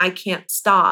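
tearful, crying, pleading voice. Retelling a morning phone call to a friend: imitating own past crying. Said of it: "crying to her saying".

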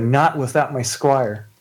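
slow, tearful, sobbing through the words. As a character in the game, speaking while Sean scrambles to free Tobin, crying. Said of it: "and she's like crying".

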